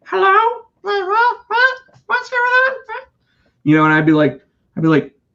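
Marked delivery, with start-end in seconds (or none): 0.1-2.7 put-on very high voice like a nine-year-old kid. Retelling a phone call, in a nine-year-old kid voice. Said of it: "like some like nine year old kid".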